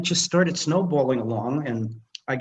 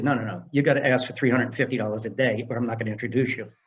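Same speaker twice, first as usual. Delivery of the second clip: ordinary delivery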